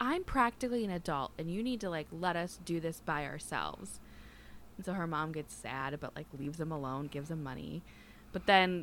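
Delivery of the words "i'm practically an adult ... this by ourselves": ordinary talk, nothing marked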